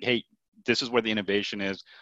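ordinary delivery

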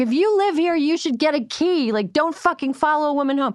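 hard, angry yelling.

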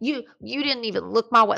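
put-on play-acted high, sloppy, slurred drunk voice. Retelling a wasted woman's complaint after the rose ceremony, imitating slurred speech. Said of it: "Like slurring her speech".

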